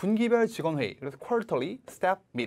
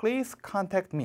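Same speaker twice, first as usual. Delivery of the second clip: strong stress on please, rest even; 3 semitones higher than usual. Teacher showing how to read an English sentence, strong stress on please. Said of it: "please 세게 읽는다고. 그래서 please contact me 이렇게 읽어주시면 됩니다".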